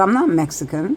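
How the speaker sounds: usual speaking voice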